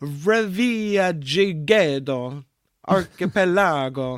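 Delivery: slow, drawn-out mock Italian accent. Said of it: "I'm gonna say this again, uh, in an Italian accent".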